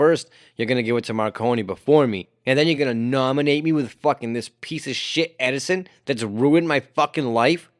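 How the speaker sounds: ordinary talk, nothing marked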